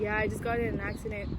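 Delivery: ordinary delivery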